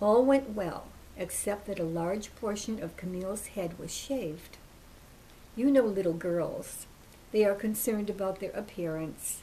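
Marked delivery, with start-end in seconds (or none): none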